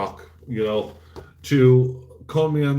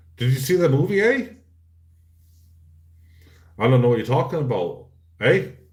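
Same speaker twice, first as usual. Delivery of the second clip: put-on Canadian accent, eh added at the end. Mocking how Canadians end every question: imitating Canadians saying eh. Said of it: "Why is every freaking Canadian says, "Eh"?".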